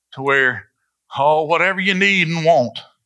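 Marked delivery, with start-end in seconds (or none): 1.2-2.8 put-on pulpit-style prosperity preacher voice. A preacher mimics the way he has heard others preach, imitating a prosperity preacher. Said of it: "I got to do that voice".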